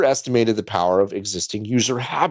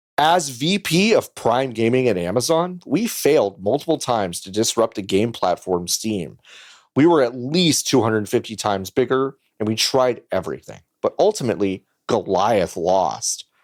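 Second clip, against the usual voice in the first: plain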